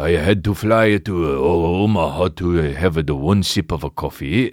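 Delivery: mock, put-on Japanese accent. Speaker riffing on going somewhere just for one sip, mock japanese accent. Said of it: "Super racist to do that voice".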